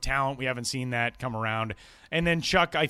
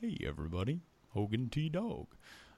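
animated, swooping talking-dog character voice; 8 dB quieter than usual. Asked to do the old voice for Hogan T Dog: Hogan T Dog voice. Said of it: "you used to do the voice for Hogan T Dog".

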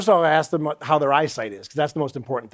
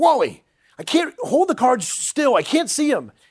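put-on very high, slow, drawn-out shouting; 10 semitones higher than usual. Retelling a sketch where a castmate broke character: imitating someone yelling. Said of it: "he starts yelling at me".

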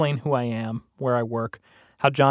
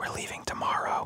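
close, hushed whisper under the breath. Retelling small talk while waiting for the judge, as a woman leans in; retelling a whisper. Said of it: "leans in very close to me and whispers".

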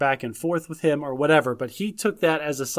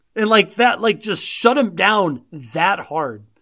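plain

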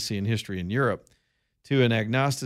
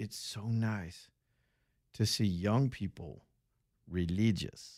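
very slow, soft, halting broken English; 7 dB quieter than usual. Retelling what a woman who approached them said, imitating broken english. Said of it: "That's the way she said it".

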